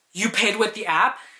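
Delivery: firm, assertive, stronger forceful voice. Retelling how the manager asked about paying with the app: imitating a stronger voice. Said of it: "with a stronger voice".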